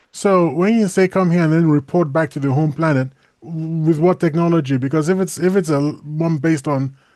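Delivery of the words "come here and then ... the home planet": normal talking voice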